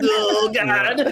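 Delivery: put-on flustered, nervous panic. Acting out a character caught in a net, nervous in-character panic. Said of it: "the anime, like, sweat animation".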